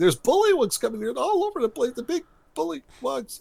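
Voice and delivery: high-pitched, panicked yelling.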